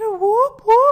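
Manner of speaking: very high, loud voice breaking into a yelp. Cheering as a battle starts, voice cracking. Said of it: "I lost my voice right there".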